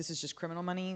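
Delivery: ordinary talk, nothing marked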